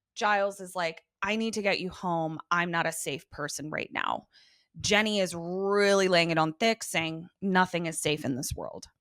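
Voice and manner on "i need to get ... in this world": plain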